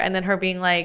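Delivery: ordinary talk, nothing marked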